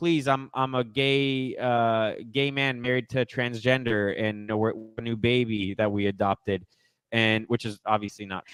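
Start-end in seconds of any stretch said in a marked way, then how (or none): none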